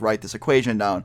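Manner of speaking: ordinary talk, nothing marked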